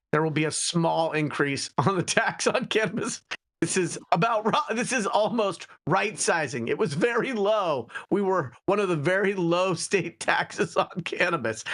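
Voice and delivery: giggly, barely held together reading through giggles. A host reading the House Speaker's quote aloud, giggling while reading. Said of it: "I can't even read her words without giggling".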